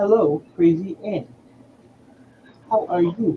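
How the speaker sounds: machine-like, robotic phone voice-assistant tone. A speaker tries doing a voice-assistant greeting: Siri voice. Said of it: "I was trying to do like a Siri thing".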